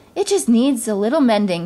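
plain

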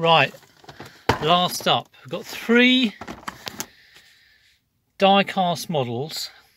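loud, winded, out of breath, pushing through. Speaker moves on to the last items, out of breath. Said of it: "I'm so out of breath".

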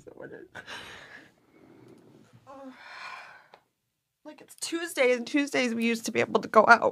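speaking while crying, tearful. Talking with someone about how life is different now, crying. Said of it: "I'm sorry, I'm just crying".

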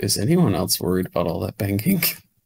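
low, muttered side remark. Voicing Jin on the ship's bridge: muttering under his breath. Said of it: "under his breath".

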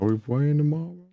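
put-on sad tone. Repeating back how a teammate asked a question: imitating a sad question. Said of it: "Why you ask like that?".

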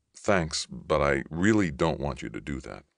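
plain

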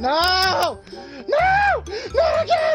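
desperate screaming. Playing a game while another player says just dodge, screaming for his life. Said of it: "Stop screaming for your life".

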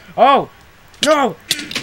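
high, loud panicked yelling.

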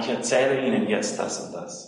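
ordinary delivery

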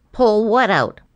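sullen. Laughed at over his paw, he asks back, sullen. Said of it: "asked Boxer rather sullenly".

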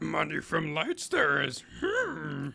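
creaky character voice with swooping pitch. Playing a game, asked to do the voice again: Yoda voice. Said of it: "do it again, do it again. Like, say something".

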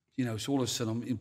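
ordinary talk, nothing marked

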